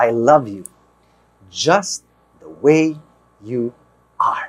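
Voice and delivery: deliberate, halting, very slow and very low. Show someone how to say this to her, straight in the eye, very slowly. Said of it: "say this very slowly".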